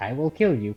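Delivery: calm, level, slightly stern mock-menacing everyday tone. Retelling saying a threat to someone: imitating own calm threat. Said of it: "just how I'm talking to you guys right now, pretty calm".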